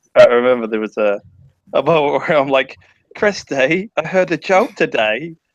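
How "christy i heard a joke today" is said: over-the-top, exaggerated fake London Cockney, pitched up. Retelling a surreal moment between friends, in an exaggerated Cockney accent. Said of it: "insane London Cockney accents".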